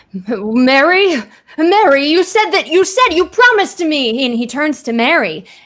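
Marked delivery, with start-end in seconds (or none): 0.3-4.3 put-on furious yelling, higher and louder. Voicing a professor turning on a companion: screaming in character. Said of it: "he's screaming at her".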